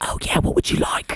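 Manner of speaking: hushed, conspiratorial whisper. Retelling the front desk's reply to a sick caller: imitating front desk whispering back. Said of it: "I should whisper with him".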